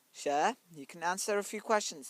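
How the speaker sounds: plain reading voice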